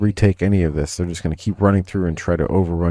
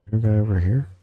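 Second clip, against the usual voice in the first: hushed half-whisper under the breath; 2 semitones higher, 4 dB quieter than usual. Moving past barbed wire as if they can hear; half-whispering. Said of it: "I'm whispering like they can hear me".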